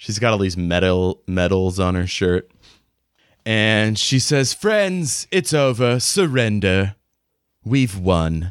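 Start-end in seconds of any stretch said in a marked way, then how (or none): 4.5-8.5 put-on refined, cultured upper-class English accent. Voicing a character who addresses the players, in a cultured english accent. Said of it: "she's got kind of a cultured English accent".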